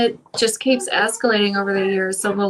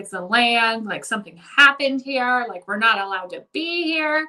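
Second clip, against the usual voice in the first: mock, frantic, rambling, rising panic; 3 dB quieter than usual. Retelling own words during a panic attack on vacation: imitating own freaking out. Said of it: "freaking out over it".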